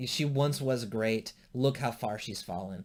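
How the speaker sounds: usual speaking voice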